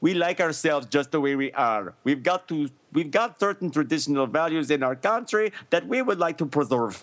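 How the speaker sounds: put-on Liberian accent. Quoting Ellen Johnson Sirleaf's words to Tony Blair, the speaker does her accent. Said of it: "That's a great accent".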